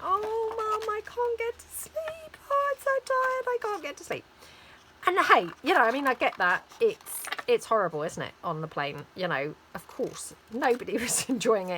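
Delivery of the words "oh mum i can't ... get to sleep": put-on very high, tearful, whiny child's crying. Retelling her daughter complaining to her on the plane, imitating her crying daughter. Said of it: "Crying, saying".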